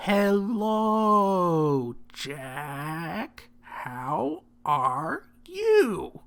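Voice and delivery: speaking slowly. Greeting someone who has just been surprised, talking slowly. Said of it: "I'll talk slowly".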